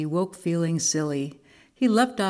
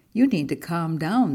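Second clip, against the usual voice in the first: plain reading voice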